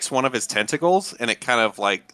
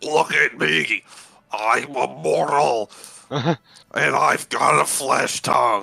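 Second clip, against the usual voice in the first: slow, creaky speech broken by gagging. Voicing a character who speaks out loud with a tongue in his throat: gagging while talking. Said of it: "it sounds like he's, like, gagging".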